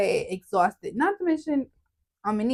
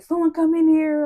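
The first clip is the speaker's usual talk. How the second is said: urgent, high-pitched shout; 7 semitones higher, 5 dB louder than usual. Quoting their grandma yelling at the nurse, the speaker retells the urgent yelling. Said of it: "she's yelling at the nurse".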